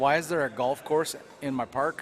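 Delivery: ordinary delivery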